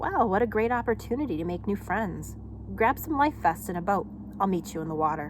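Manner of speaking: plain reading voice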